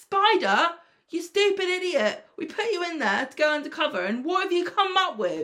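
acted stern telling-off tone. Acting out how the boss should tell Spider off: imitating a scolding boss. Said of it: "I'd be like".

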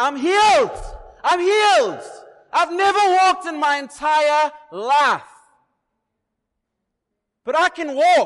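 drawn-out, high, loud exultant cries of joy. Imagining the healed man leaping for joy: imitating joyful shouting. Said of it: "leaping for joy".

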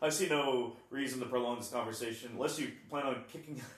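ordinary talk, nothing marked

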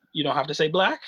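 normal talking voice

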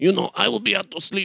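high-pitched, creaky put-on voice.

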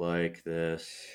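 very low, very soft, hushed flat monotone. Showing how everybody in the show talks: monotone voice. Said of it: "Everybody talks in a monotone voice".

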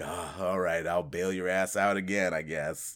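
put-on sarcastic voice. Speaker acting out an older partner's reply to Spike, mock-sarcastic reply. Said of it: "he's very sarcastic".

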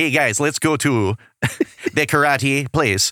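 put-on Fargo-style northern US accent. A speaker imitates a character from a show they're discussing, in a northern Fargo accent. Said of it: "He has kind of a northern accent going on".

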